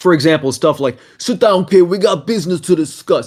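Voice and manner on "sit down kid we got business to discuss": hammy, overhyped, over-the-top put-on voice, pitched up. Showing off voice acting planned for a game, over-the-top voice acting. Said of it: "some completely uh, overhyped voice talent".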